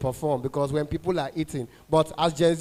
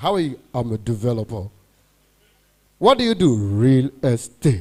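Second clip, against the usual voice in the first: heavy, thick, slow, deliberate, raised moneyed voice; 5 semitones lower, 6 dB louder than usual. Acting out a rich man talking, thick rich-man voice. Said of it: "people that have money, their voice is very thick".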